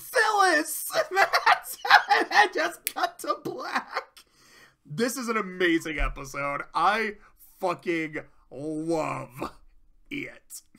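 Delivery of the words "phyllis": high, loud, wailing, mortified cry. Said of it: "just mortified".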